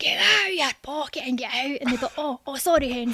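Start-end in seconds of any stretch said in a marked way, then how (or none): 0.0-1.8 forceful, mock tough gangster-like roar. A 13-year-old recalls roaring at a shoplifter caught pocketing something: retelling a roar. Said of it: "I would just roar at the top of my voice".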